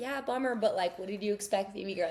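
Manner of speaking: ordinary delivery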